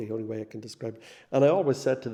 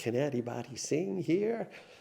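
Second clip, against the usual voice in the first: slow put-on Chicago accent, calling out; 3 semitones higher, 4 dB quieter than usual. Retell how a Father came out of the sacristy door and asked the crew, imitating a Chicago accent. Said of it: "in his Chicago accent".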